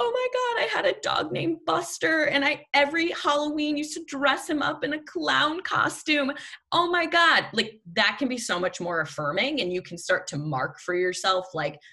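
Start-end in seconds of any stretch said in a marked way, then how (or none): 0.0-7.5 very high, sobbing, tearful crying speech. Imitating the person across from you who starts crying: imitating someone crying. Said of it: "just starts crying and is like".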